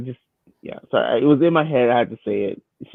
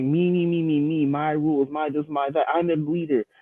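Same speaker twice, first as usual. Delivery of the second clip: put-on bratty, whiny, petulant child voice; 3 semitones higher, 3 dB quieter than usual. Mocking a leader who keeps insisting on his rules: mocking petulant child voice. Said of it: "You sound like a petulant child".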